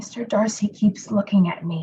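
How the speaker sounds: low whispering. Speaking aside to a companion in a drama, whispering. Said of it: "(Jane whispers to Elizabeth)".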